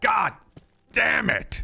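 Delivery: shrill, very loud, high put-on American accent. Retelling how they cursed after burning their hand, american accent. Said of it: "with an American accent".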